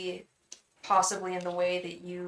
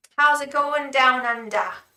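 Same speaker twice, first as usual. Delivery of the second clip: awful put-on Australian accent, very loud, high; 6 semitones higher, 9 dB louder than usual. Speaker greets Mel in an awful put-on Australian accent. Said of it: "the awful Australian accent".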